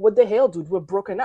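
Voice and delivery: ordinary delivery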